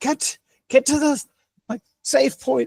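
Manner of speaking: very high, shrill yelling. Playing a character warning fleeing townspeople in combat: yelling in character. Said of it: "she keeps yelling".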